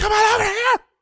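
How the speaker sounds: whispered yell. Trying to yell in a whisper: shout whisper. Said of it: "are you yelling or are you whispering?".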